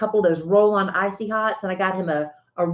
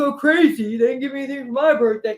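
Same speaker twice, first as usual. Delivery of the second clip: high, dopey, dim-witted put-on caricature voice; 6 semitones higher, 3 dB louder than usual. Repeating the birthday line as Big Dumb Alan, in a dopey Alan impression. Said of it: "Are you doing the impression of Melissa Hecht doing the impression of me being Big Dumb Alan? Yeah, that's exactly".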